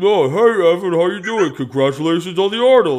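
booming, loud, high speech through a full mouthful. Retelling greeting Evan at an event: imitating talking with mouth full. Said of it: "with a full Snickers bar in my mouth".

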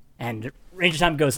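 ordinary talk, nothing marked

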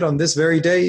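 ordinary talk

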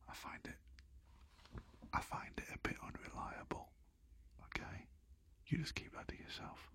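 quiet voice. Talking about their thermostat, not wanting to offend it, saying it quietly. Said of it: "I'm going to say this quite quietly".

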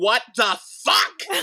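acted-out yell. Recalling first watching an episode's ending: retelling a yell. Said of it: "I literally yelled".

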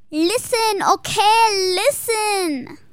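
put-on very high, loud Latin American Spanish accent, stretched "okay".

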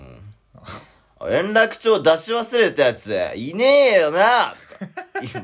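very loud, very slow, drawn-out cool gang-boss voice. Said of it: "マイキーのモノマネを最近しる".

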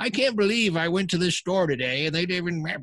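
put-on cranky old man voice. Speaker recalling how he sounded after four episodes of his show, cranky old guy voice. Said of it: "I just sounded like a cranky old guy going".

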